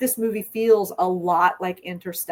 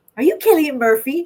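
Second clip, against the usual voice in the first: put-on high, loud older Irish woman accent; 8 semitones higher, 7 dB louder than usual. Retelling a podcast story, the speaker voices a woman in a chip shop, older Irish lady accent. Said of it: "an Irish accent of like an older lady".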